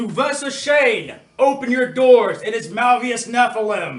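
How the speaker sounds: very loud, booming, high-pitched scream. A player casts a spell and calls for the doors to open: booming scream. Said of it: "booming voice, and I scream".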